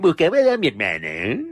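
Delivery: put-on, mocking, taunting, teasing tone. Speaker quotes a favorite part where Selene speaks, imitating Selene's mocking tone. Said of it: "en tono burlón dice".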